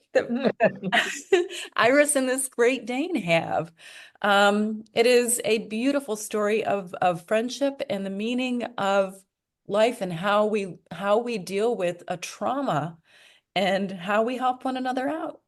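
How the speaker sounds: choked-up voice on the verge of tears. Speaking about a story, about to cry. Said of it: "I'm going to cry".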